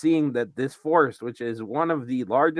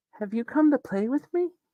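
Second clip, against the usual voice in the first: put-on very high playful little-girl voice; 13 semitones higher than usual. Voicing a little girl heard playing near the castle: playful little girl voice. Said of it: "you hear her just doing the kind of".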